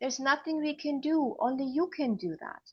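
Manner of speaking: mimicked loving, tender tone. Retelling what a nurse said to her during labor, imitating a loving tone. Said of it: "very lovingly says".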